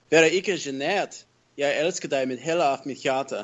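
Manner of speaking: put-on speaking with Danish accent. Answering a request to talk for the first seconds: Danish accent. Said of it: "talk, like, in a Danish accent of some sort".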